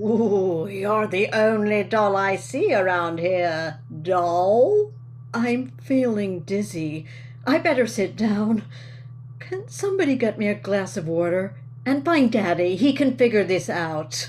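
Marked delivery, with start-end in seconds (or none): 0.0-4.9 cheeky, flirty British ventriloquist dummy voice. A ventriloquist's dummy answers a woman who won't talk to a doll, British ventriloquist dummy voice. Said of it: "The roles of Chicagoan [name] and British ventriloquist dummy [name] are played by [name]".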